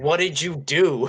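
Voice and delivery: yelling in a character voice. Voicing a character who ambushes a player, yelling. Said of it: "he yells".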